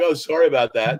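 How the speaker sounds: acted-out words spoken through laughter. Retelling apologizing to someone back then, retold laughing apology. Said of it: "I laughed and I was like".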